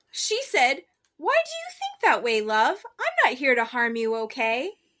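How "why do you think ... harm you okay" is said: chatty, swooping talking-parrot voice. Retelling a scammer's message as a viral video bird: imitating a talking parrot. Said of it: "This is the bird".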